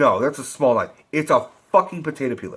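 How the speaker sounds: normal talking voice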